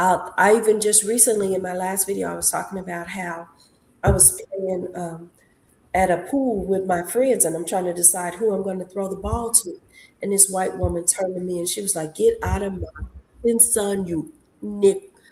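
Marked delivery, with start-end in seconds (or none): 12.2-15.1 mock very slow, spiteful, nasty tone. Retelling what a woman at a pool said to a child: imitating someone speaking nastily. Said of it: "She said it so nastily".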